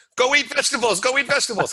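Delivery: put-on, very high, loud, shrill shrieking voice. Acting out a manager yelling at a binge-eating customer: imitating a manager screaming. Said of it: "the manager starts screaming".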